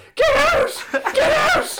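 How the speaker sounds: piercing, very high, very loud, drawn-out screams. Telling a story, acting out his woman screaming at him, retelling a scream. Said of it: "my woman starts screaming".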